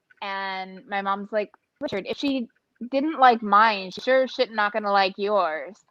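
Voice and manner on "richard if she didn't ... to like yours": ordinary talk, nothing marked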